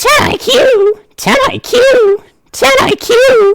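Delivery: very high-pitched cartoon cat voice. Answering a viewer's request, trying to replicate the Meowth voice. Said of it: "do it in Meowth's voice".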